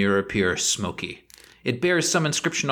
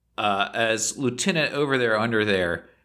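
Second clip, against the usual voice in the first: usual speaking voice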